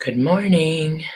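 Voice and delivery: half-whispered, partly whispering voice. Greeting people after losing their voice in Nashville, the speaker is whispering. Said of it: "I'm kind of whispering".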